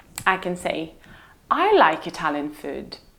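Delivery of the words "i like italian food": stress on the first word, I. Demonstrating what happens when stressing different words: stress on I. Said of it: "Not my brother, not anybody else".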